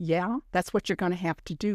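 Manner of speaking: normal talking voice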